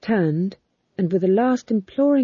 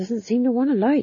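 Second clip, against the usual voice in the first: mumbled, muttered aside; 3 semitones higher than usual. A fool speaking as his matches keep going out: muttered. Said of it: "muttered the fool".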